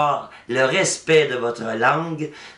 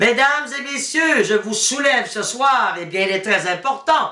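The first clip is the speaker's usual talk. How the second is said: raised, insistent voice, pitched up; 9 semitones higher than usual. Giving an example of a disagreeable person who keeps raising their voice: raised voice. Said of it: "quelqu'un qui élève le ton sans arrêt".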